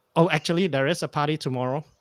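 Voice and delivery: ordinary talk, nothing marked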